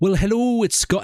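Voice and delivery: put-on Scottish accent with American tinge. Watching a video and imitating its greeting: imitating Scott Manley's accent. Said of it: "It's like an American Scottish accent".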